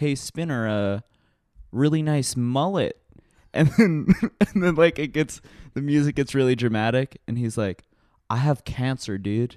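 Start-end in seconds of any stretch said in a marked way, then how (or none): 8.3-9.6 dopey, dumb-sounding put-on Canadian accent. Recounting a dramatic scene, quoting a boy's line in a dumbass Canadian voice. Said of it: "in like this fucking dumbass Canadian voice".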